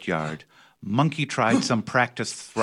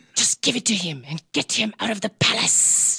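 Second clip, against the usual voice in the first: hissed words, pitched very high; 10 semitones higher than usual. The queen speaks to the king in the palace; hissing. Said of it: "hissed the queen".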